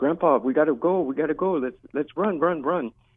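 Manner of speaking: urgent yelling, called out but held in. Retelling how she yelled at her grandfather to flee the bombing: imitating someone yelling. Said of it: "she's yelling at her grandfather".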